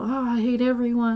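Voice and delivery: ordinary talk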